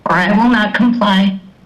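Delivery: plain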